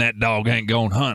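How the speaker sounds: put-on speaking in a Southern American accent. Recounting a morning spent repeating a phrase, in a Southern accent. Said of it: "speaking in southern accents like this".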